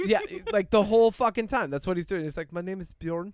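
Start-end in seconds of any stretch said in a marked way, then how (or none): 2.5-3.3 soft, put-on Belgian-accented English. Speaker quotes a movie character's lines: Belgian accent. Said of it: "like this Belgian accent".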